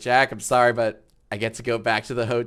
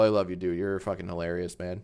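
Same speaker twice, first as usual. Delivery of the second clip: usual speaking voice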